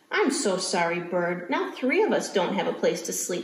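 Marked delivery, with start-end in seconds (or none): none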